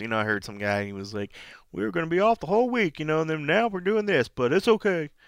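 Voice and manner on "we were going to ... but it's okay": put-on country accent, pitched up. Retelling what a security guy at an event said, in a put-on country accent. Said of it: "He didn't really sound country like that".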